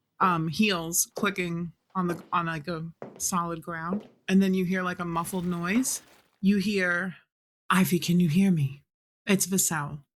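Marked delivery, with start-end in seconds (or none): 7.7-10.0 strained, urgent, very tense calling out. Voicing a muffled call through a rock asking for ivy: very tense tone. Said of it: "Her tone is very tense".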